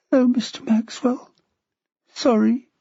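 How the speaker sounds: high half-whisper thick with tears. A crying girl answers the man who crept in to speak to her, tearful half-whisper. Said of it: "thick with tears, her answering whisper".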